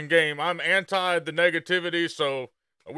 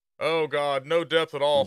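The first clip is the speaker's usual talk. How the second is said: mock sarcastic, complaining tone. Reacting to a game feature explanation with mock sarcastic complaining. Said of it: "we're being sarcastic".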